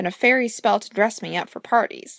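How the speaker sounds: ordinary delivery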